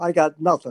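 bone-dry, very deadpan, flat, expressionless delivery. Retelling a receiver's reply to the quarterback: imitating Raymond Berry deadpan. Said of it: "very deadpan, only in Raymond Berry".

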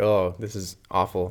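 ordinary talk

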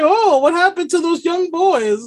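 goofy, high-pitched cartoon voice. Joking about a cartoon character's dubbed voice, doing a goofy Mr. Popo voice. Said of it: "his fucking goofy ass Mr. Popo voice".

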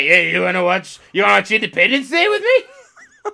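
lively, chatty, animated, casual with swooping intonation. Retelling how he comes in and invites someone to a movie: imitating an acquaintance. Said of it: "he's like".

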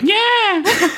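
high, sharp yelp like a startled cat. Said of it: "cat yell a lot when she's surprised".

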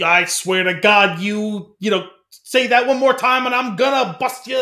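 put-on New York street-tough accent. Mocking how old-school tough guys talk, in a fake New York tough-guy accent. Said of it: "the fake, like, New York tough guy accent".

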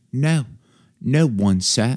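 read in British English accent. Reader voicing a line that feels like it should be British, British accent. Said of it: "it just feels like it should be read with a British accent. Like".

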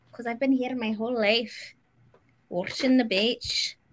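put-on Scottish accent. Joking with the others in a put-on Scottish accent. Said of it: "whisked me away to a Scottish Highland village".

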